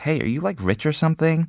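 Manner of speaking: high, put-on Valley Girl accent. Reading a line from a listener's story: Valley Girl voice. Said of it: "says to do in a Valley Girl voice".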